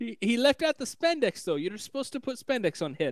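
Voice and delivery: high, bad, Italian-sounding accent. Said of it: "That was a terrible accent".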